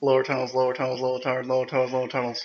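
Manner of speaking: rapid-fire, very fast repeated words. Taking the challenge to say a tongue twister five times: very fast tongue twister. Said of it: "say lower tunnels five times fast".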